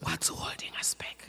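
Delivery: soft, hushed, barely voiced whisper. Speaker repeating a question to listeners, whispering. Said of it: "I'm whispering now".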